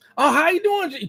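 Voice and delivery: surprised, startled, very high-pitched. Acting out a caller surprised that a real person answered: acting shocked caller. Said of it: "'Cause you're so shocked".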